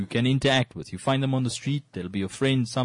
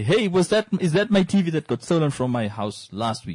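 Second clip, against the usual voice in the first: high, faux-innocent sarcastic tone; 5 semitones higher, 4 dB louder than usual. Describing replies on Facebook Marketplace posts, retelling a sarcastic remark. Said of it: "someone would sarcastically say".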